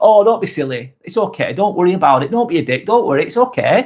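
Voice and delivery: easygoing, calm, light and friendly tone. Showing how a swear word can be said lightly; calm, friendly tone. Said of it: "in a friendly way".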